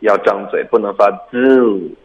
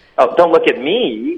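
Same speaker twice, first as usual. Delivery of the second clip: pouty, cutesy, coy whine, pitched up; 8 semitones higher than usual. Reading an English line aloud for a class to practise, in a coy, whiny tone. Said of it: "可能有撒娇的语气在里边啊".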